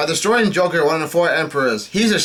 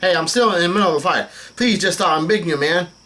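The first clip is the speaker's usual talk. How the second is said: ordinary talk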